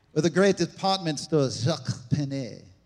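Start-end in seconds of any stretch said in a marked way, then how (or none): 1.6-2.6 joking, put-on fake French accent. Joking about fancy-sounding store names: joking fake French pronunciation. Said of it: "when you say it like that".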